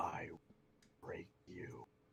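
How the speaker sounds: breathy, very quiet whisper, close into the ear. Voicing a character pulling a foe in close after a kick: whispering. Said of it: "just whisper to him".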